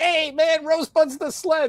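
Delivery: mock eager, thrilled, enthusiastic blurt, very high pitch. Retelling a friend spoiling a movie: imitating Chris being enthusiastic. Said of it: "he'd be all enthusiastic and he'd be like".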